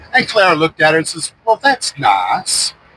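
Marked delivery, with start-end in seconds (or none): 1.4-2.7 put-on Savannah Southern belle accent. Telling a story, voicing Clara's reply to Henrietta in a Southern belle Savannah accent. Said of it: "their Southern Belle Savannah accent".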